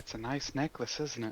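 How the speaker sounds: very quiet, hushed whisper. A player's character leans in to whisper to a woman: whispering. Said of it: "I just lean in and whisper to her".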